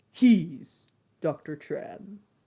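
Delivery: deep movie trailer announcer voiceover delivery. Describing a video where a voice talks to a little boy: movie trailer announcer voice. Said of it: "this very uh movie trailer announcer voice says".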